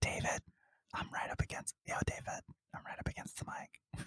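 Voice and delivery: very quiet whisper close to the mic. Retelling how they talk when recording audio: imitating own whispering. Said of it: "I have to, like, whisper 'cause it's audio".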